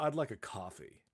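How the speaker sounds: mock condescending, blunt, straight-out tone. Retelling a passenger's coffee request to a flight attendant: imitating a condescending tone. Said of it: "his condescending tone to her".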